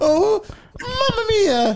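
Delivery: very high-pitched cartoonish squealing exclamation. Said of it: "They all just fall like Mario".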